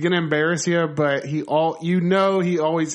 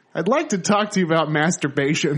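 fatherly film dad character voice. Retelling a movie scene about a family picture: imitating Eugene Levy. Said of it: "the next beat is".

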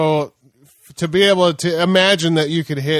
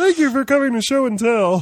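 high froggy cartoon kid voice, pitched up; 9 semitones higher than usual. Podcast host riffs on a slip of the tongue, Billy kid voice, Kermit-like. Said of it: "you sounded like Kermit the Frog there".

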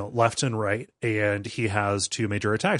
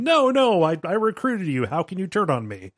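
mock screaming, yelling; 7 semitones higher than usual. Recounting a game villain as his own cultists turn on him, retelling a scream. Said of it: "And he's screaming".

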